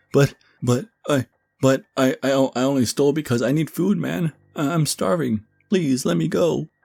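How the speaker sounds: very high, stuttering, stammering, pleading tone. A man who stole from the gym begs Derek to let him go; stammering, pleading.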